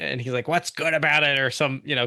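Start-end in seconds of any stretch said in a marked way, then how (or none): 0.5-1.4 imitated grumpy old man voice. Retelling a movie scene, answering the wife's good morning: imitating a grumpy old man. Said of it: "grumpy old man stuff".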